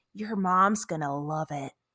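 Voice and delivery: soft, hushed, under-the-breath stage whisper. Retelling a scene during class where one kid half-whispers to another: imitating a half-whisper. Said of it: "he whispers to Joseph".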